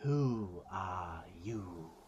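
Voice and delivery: thunderous deep feminine voice. Voicing a regal creature that leans forward to speak, in a deep thunderous feminine voice. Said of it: "you hear a feminine voice, but still very thunderous and like very deep".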